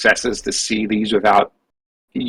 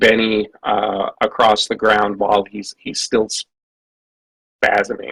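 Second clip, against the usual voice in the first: ordinary talk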